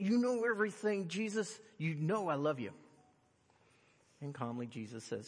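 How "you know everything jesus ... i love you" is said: mock agitated, upset, insistent, pitched up. Retelling Peter answering Jesus a third time, acting Peter upset. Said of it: "that's probably the way he said it".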